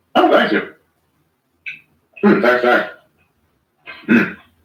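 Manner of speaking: spoken through a full mouth while chewing. Thanking a friend for congratulations while talking with mouth full. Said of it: "but I got my mouth full".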